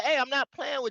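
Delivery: acted, stern, dead serious, no-joking tone. Retelling what people say behind closed doors: imitating a serious warning. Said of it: "they taking it jokingly, but be like".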